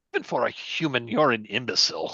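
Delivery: muttered aside, but aloud. Game narrator voices a character glancing at a henchman, muttering to himself. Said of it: "says kind of to himself".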